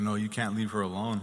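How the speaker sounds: ordinary delivery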